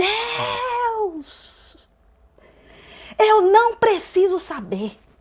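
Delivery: loud high-pitched shout. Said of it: "ela gritava".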